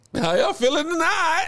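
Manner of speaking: put-on high, tearful voice, raw from crying. Retelling greeting the Philly show crowd after crying hard: imitating own crying voice. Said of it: "you know when you cry, your voice be".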